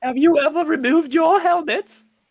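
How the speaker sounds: very high, shrill, loud, silly sketch-comedy voice. Speaking in character to the other players: Monty Python-style voice. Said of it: "Why do you sound like you're from Monty Python?".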